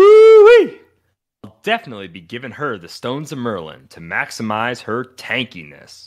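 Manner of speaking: heavily inflected, very high, loud whoop. Reading out a commenter's clue line, extra inflection on the woo-wee. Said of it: "I may have put more inflection on his ooh-wee".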